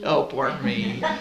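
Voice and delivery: put-on whiny voice. Asked who has a whiny voice, a participant retells their own words: retelling a whiny voice. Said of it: "It could be monotony or whiny".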